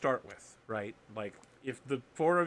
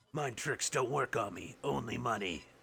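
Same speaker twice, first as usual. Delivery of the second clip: put-on alien creature voice, quieter; 4 dB quieter than usual. Doing a quick character bit during a game: Watto voice. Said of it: "That felt pretty Watto-ish".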